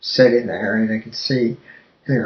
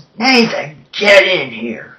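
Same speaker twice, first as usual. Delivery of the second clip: restrained yell, raised but held back, pitched up; 7 semitones higher, 5 dB louder than usual. Recounting Joe calling for Nathan, retelling Joe's yell, toned down. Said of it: "Joe yells".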